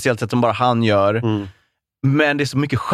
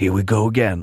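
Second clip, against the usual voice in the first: movie trailer narrator voice, much lower; 4 semitones lower than usual. Talking about a movie character, the speaker mimics the movie trailer voice. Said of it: "den här trailerrösten".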